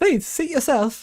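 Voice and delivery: very high, sweet, innocent character voice. Asked to use the Martlet voice, speaker tries it out: Martlet voice. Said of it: "the Martlet voice ... That that sounds too innocent, though. Too lighthearted".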